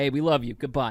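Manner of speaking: put-on general Eastern European accent. Playing someone in Ukraine signing off, in a general Eastern European accent. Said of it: "this is general Eastern European accent".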